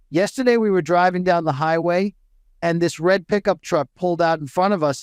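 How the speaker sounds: ordinary talk, nothing marked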